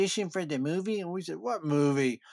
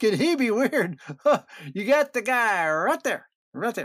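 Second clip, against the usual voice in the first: high, raised yell, mock hollered out; 6 semitones higher, 4 dB louder than usual. Speaker retells how his two friends reacted to a stranger; imitating friends yelling. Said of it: "They start yelling".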